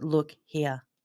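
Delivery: low, flat, unvarying monotone. Describing what it sounds like, demonstrating it in a flat monotone. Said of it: "just really sort of like monotone. So look here, like that".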